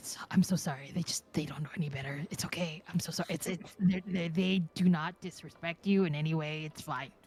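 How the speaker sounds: whispered, voice dropped deep. Player in a role-play game speaks as their character to another character, whispering. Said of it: "And I whisper".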